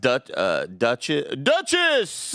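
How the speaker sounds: put-on game announcer voice. Calling out a game character's name on request, in a Smash announcer voice. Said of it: "his name in the Smash announcer voice".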